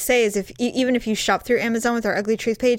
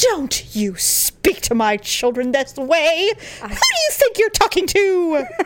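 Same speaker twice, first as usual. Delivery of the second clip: put-on haughty, lofty near-English accent, swooping high, scolding; 6 semitones higher than usual. A parent acting out scolding someone about their children, in a put-on haughty english accent. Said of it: "get this haughty, like almost English accent".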